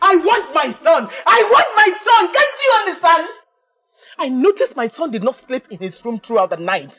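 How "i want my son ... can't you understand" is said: very high, climbing, rising shout. A parent demands their missing son from someone leaving for work: shouting. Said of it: "And stop shouting".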